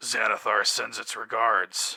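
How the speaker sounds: deep put-on orc monster voice. A storyteller voices one of several unseen speakers among the crates; deep Orcish accent. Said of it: "One of them sounds like a deep uh, Orcish accent".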